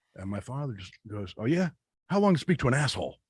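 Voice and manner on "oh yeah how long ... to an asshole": put-on loud, retorting East Coast accent. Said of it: "very East Coast".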